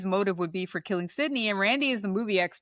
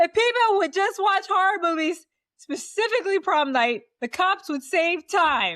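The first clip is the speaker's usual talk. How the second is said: acted scream, higher and louder; 10 semitones higher, 4 dB louder than usual. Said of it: "He screams".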